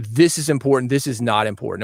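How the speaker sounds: ordinary talk, nothing marked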